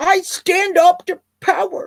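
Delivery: whiny, high-pitched, slow, drawn-out voice. Mocking Warren's claim to stand up to power: whiny Warren imitation. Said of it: "not in that whiny little voice".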